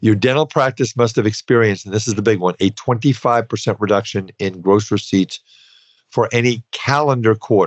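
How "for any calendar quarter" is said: emphatic, firmly stressed calendar. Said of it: "Emphasis on calendar".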